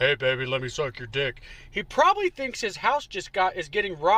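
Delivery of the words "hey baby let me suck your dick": billowing, deep, smoky-voiced woman's call. Mocking how a woman talks with a deep voice: mocking a deep-voiced woman. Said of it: "with that deep-ass voice".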